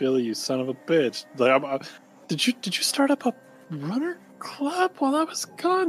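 private, half-to-self mumble under the breath. A character walking in, addressing billy under his breath. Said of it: "This is all kind of under my breath".

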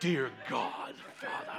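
whispered, hushed, breathy, actorly showy prayer tone. Pastor mocking people whose voice changes when they pray, imitating a theatrical prayer voice. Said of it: "all of a sudden their voice changes. They become actors".

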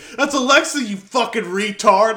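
loud, high-pitched shouting. Retelling yelling at the TV while watching a show, retelling a yell. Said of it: "I just yelled at the TV".

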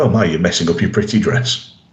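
put-on condescending tone. Retelling a scene where the Doctor strolls up to her, mock-condescending as the Doctor. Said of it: "very condescendingly says".

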